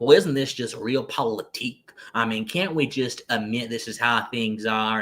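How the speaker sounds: put-on mimicked classic Southern accent. Quoting what a thinker would always say, imitating his Southern accent. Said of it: "that classic Southern accent".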